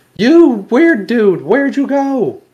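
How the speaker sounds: very loud, very high, booming yell. A player's character calls into the woods for a stealthy companion, yelling through cupped hands. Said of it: "I'm yelling out with my hands over my mouth".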